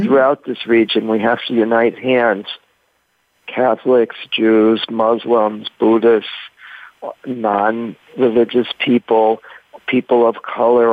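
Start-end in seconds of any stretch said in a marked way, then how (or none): none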